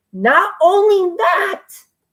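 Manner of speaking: voice breaks up, cracking very high. Speaker announcing a review on his channel, with a voice crack. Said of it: "oh sorry, voice crack".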